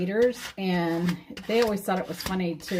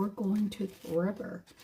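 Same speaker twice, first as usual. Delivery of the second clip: put-on creepy, eerie, freaky tone; 7 dB quieter than usual. Retelling how a man kept repeating where they were going, imitating a freaky tone. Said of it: "kept saying it in a really freaky tone".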